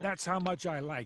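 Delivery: cartoon character voice, loud and high-pitched. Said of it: "it sounded like Bender there for a second".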